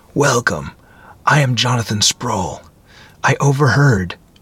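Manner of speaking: gentle, friendly murmur. Narrator reads a man greeting visitors who come into his place, in a mellow, friendly murmur. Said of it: "he murmured in a mellow, friendly voice".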